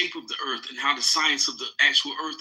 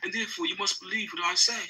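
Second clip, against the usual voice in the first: mock pretentious voice, higher and quieter; 4 semitones higher, 4 dB quieter than usual. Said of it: "I have the pretentious voice".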